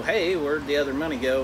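normal talking voice

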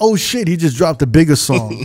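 plain

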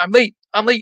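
mock high-pitched shouted cry. Acting out what people scream running out the door late for work, imitating someone screaming. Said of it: "screamed this out the door saying".

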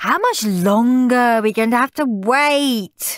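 whiny complaining moan, high, "wait" drawn out. Narrator reads Henry, waiting in a long queue to see Father Christmas, whining. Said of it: "whined Henry".

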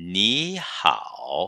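ni said with rising second tone. Mandarin lesson on two third tones together: rising second tone on ni. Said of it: "o ni aqui é lido em segundo tom. Comigo".

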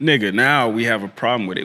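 ordinary talk, nothing marked

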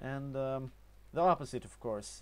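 Norwegian-accented English with hard consonants.

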